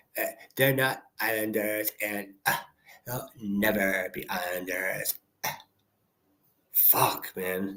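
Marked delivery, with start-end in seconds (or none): 0.5-5.1 soft, condescending creaky vocal fry. Mocking another person's remark, in a put-on condescending vocal fry. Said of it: "How condescending can you possibly be with your voice".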